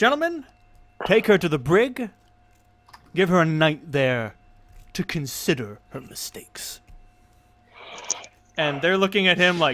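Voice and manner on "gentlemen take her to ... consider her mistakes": soothing, calming voice, louder. Voicing the Emperor who calms a gasping crowd: Emperor calming a crowd. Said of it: "holds up his hands like".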